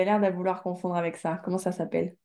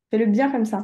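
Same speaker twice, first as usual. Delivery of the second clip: ordinary talk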